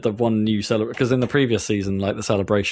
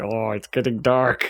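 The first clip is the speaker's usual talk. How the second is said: put-on dwarf voice, slow, eerie and creepy. Describing what the game's new robots say when you kill them: creepy dwarf voice. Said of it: "in dwarf voice".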